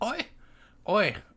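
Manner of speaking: put-on Scottish accent, very high, loud lady voice. Narrating a story, the speaker gives a female character a scottish woman's voice. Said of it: "She's a Scottish".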